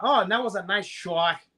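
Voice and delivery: put-on Boston accent slipping back in. Imitating a commentator whose accent slips out: imitating Ken Flo's slipping accent. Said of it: "Ken Flo worked very hard to get rid of his accent".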